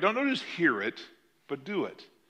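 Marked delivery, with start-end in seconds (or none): none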